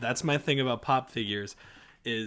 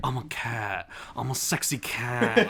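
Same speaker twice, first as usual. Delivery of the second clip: very slow, each word drawn out. Retelling a TV episode scene: Nicolas Cage impression. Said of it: "doing, like, a Nicolas Cage impression".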